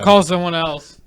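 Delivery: put-on yelling. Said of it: "And yells at somebody else".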